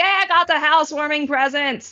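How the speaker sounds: thrilled, excited shouting. Roz arrives downstairs carrying a big gift basket, yelling excitedly. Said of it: "Sorry, I'm yelling".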